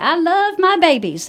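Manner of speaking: high, dainty, cute little country voice. Showing listeners how the amazing director says it, in Tammy Mitchell's little country cute voice. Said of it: "she says that in her little country cute voice".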